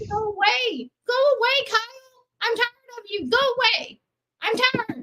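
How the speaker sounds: shouting. In an argument over gaslighting accusations, the speaker yells at another participant. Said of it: "Why are you yelling at me?".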